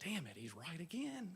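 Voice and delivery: soft, hushed grumbling under the breath. Retelling what was said under breath while using the shovel: imitating muttering under breath. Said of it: "I said under my breath".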